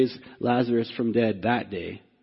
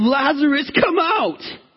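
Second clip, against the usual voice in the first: tear-filled, anguished, passionate shout, very high and loud; 6 dB louder than usual. Preaching on a raising from the grave, reenacting an anguished shout. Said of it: "He shouted in anguish".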